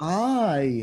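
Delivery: strong stress on the opening word I. Demonstrating word stress to a partner, putting stress on the word I. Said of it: "emphasize on the first word".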